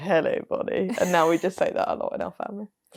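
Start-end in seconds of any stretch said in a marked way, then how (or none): 0.0-0.9 mock-creepy voice, quieter. Retelling how a man greeted a contestant named bonnie: retelling a creepy greeting. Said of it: "he said it in a very creepy way".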